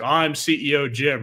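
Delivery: normal talking voice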